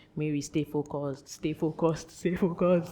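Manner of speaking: soft whisper under the breath, to oneself. Showing how one talks to oneself when distracted at an event, whispering. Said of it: "I'm actually whispering to myself".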